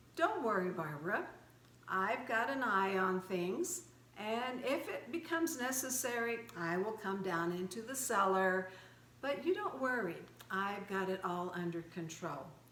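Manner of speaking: ordinary delivery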